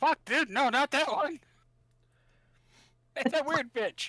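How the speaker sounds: very high-pitched squealing voice. Imitating a companion's reaction to a creature behind a door: imitating Daddy. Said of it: "You can hear Daddy go".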